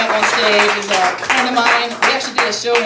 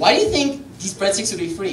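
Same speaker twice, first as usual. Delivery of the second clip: plain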